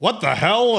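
loud high shout. As a player shoots one of the corpses, Raj turns and shouts. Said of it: "Raj turns and shouts like".

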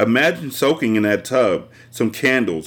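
ordinary delivery

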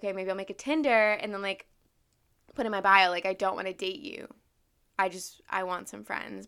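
ordinary talk, nothing marked

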